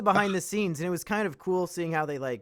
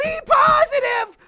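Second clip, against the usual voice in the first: mock yelling, higher pitch and louder; 9 dB louder than usual. Retelling a film scene, a boy reading alone: imitating Bastian yelling. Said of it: "starts yelling".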